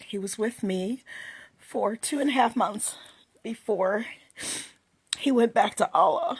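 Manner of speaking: tearful, halting speech. Telling the story of the baby son she lost, crying. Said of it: "I'm already crying".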